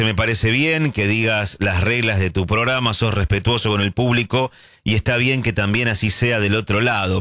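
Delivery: ordinary delivery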